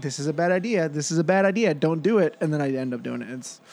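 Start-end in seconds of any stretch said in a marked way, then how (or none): none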